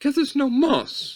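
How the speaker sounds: very high, dainty, lady-like woman's voice. Retelling the lady's question about stones: imitating a lady's higher voice. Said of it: "I had to go up there 'cause there's a lady's voice".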